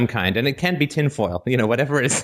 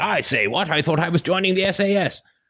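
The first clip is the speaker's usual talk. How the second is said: outrageous, exaggerated, high-pitched British accent; 8 semitones higher than usual. Suggesting how Student Assessment Services should show up, outrageous British accent. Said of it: "with an outrageous British accent".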